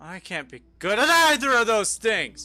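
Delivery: worked-up, loud, high, passionate yelling outburst. Joining a conversation about Moses being good at art and physics, yelling. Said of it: "Sorry to yell".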